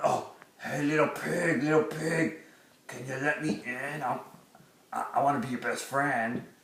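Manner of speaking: very hushed, quiet fairy-tale character voice. Dad doing a puppet show, in a Big Bad Wolf voice. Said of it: "Big Bad Wolf came to town. / Big Bad Wolf came to town. / Dad puppet show (uploaded 2014)".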